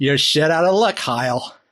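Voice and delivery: fake, put-on American accent. Imagining a store's message saying his pre-order fell through: put-on american accent. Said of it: "that's a good American voice".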